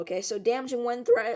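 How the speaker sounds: voice cracking and breaking badly. Warning about tomorrow's tornadoes after yelling all day: voice cracking badly. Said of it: "my voice cracked really badly there".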